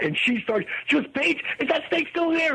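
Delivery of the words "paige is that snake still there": put-on frantic panic, much higher pitch. Retelling what she asked while hunting for the cats, imitating someone frantic. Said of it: "running around trying to find the cats".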